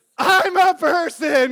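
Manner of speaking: very loud, high-pitched shouting yell. Retelling what he yelled back at the driver: retelling his own yell. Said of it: "I yelled to them".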